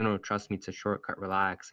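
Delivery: ordinary delivery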